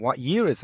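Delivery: ordinary delivery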